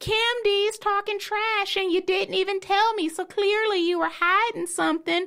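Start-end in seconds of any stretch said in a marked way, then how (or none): 0.0-3.1 put-on country voice, pitched much higher. Co-host acts out Teresa reacting on the next episode, in a country-accented Teresa impression. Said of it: "You sound like a country person just now".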